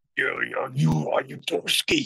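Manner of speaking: rough, gravelly, breathy voice, half-whispered. Speaker retells an unexpected phone caller asking for them, imitating a gravelly voice. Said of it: "it was a really gravelly voice".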